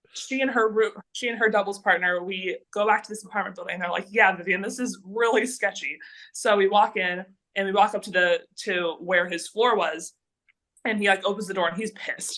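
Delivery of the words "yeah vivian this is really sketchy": ordinary delivery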